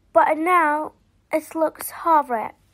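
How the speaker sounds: usual speaking voice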